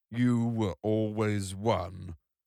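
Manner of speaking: put-on slow, groaning, aged, husky robot voice. Narrator reading an old robot's line: groaning aged robot voice. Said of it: "groaned the aged husk of the robot".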